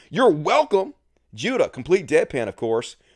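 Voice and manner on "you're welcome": chipper, sunny, bright and cheerful. Acting out their own reply to a Walmart security guard's sarcastic thanks, retelling a cheerful reply. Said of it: "Me cheerfully".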